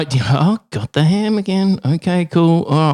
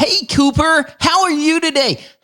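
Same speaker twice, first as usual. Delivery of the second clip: put-on American accent, very high-pitched; 12 semitones higher than usual. Trying out accents while greeting Cooper, American accent. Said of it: "That sounded like an American to me".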